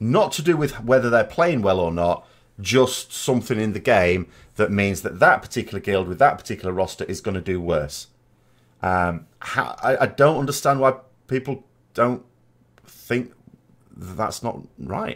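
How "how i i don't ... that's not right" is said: flustered stammering, slower. Arguing about something in the game that hurts guilds, stuttering and flustered. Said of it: "I'm stuttering because I".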